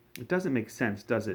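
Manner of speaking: plain reading voice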